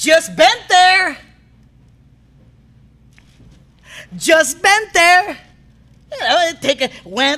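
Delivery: sassy, mouthy tone full of attitude. Playing a catchphrase game, saying DC's line in a mock-sassy tone. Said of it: "says something offensive in a sassy tone".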